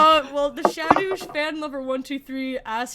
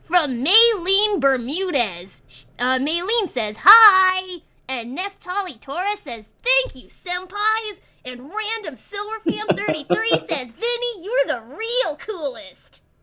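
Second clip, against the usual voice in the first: hi pitched up and dragged out; 6 semitones higher than usual. Reading out comments from viewers; attempted Charmy Bee voice. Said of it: "read some comments in my attempted Charmy B voice".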